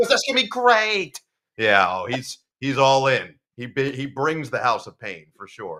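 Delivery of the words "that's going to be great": put-on Long Island accent, higher and louder. Retelling what a spotter says each game week: imitating a thick Long Island accent. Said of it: "with a thick Long Island accent".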